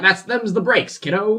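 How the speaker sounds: put-on 1940s newsreader voice. Doing a voice meant to be a 1940s news reporter: put-on 1940s newsreader voice. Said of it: "It's supposed to be like a nineteen forties like news reporter".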